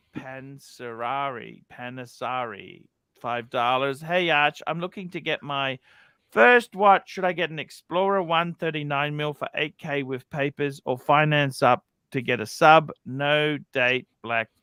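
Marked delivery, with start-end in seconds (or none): none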